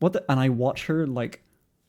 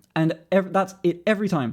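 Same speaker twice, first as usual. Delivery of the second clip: ordinary talk, nothing marked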